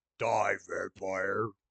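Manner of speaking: very deep, low, growly monster voice. Retelling a story where he threatens a vampire, super low and growly voice. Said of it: "he says it all super low and growly".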